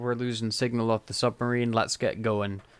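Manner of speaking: ordinary talk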